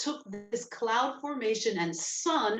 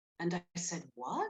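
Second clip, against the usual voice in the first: usual speaking voice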